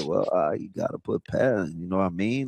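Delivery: soft, offhand, faintly disgusted tone. Retelling the player's remark about pads again: imitating an almost disgusted, soft-spoken player. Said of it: "He was almost disgusted".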